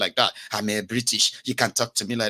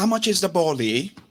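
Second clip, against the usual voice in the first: fake London accent, higher pitch; 7 semitones higher than usual. Mimicking someone back from two weeks in london, fake london accent. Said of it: "They don't get accent. Innit?".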